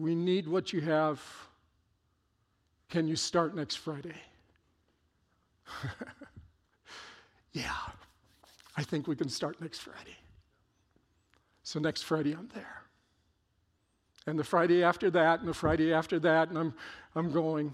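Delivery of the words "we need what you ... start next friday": hard, dead-even monotone, acted out. Recalling explaining a program to a woman, the speaker quotes her, imitating a flat monotone. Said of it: "in a monotone voice still hard no smile".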